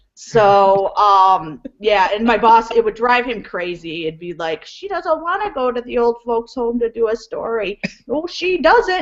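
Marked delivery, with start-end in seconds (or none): 4.6-9.0 goofy, silly high puppet voice. Acting out a mitten puppet show done for the boss, silly puppet voice. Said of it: "I do puppet shows for my boss".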